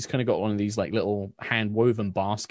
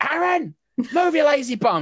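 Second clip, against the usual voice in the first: acted-out yell, much higher pitch; 5 dB louder than usual. A storyteller recounts a woman in the back yelling at her son, imitating a mother yelling. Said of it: "and like she's like yelling".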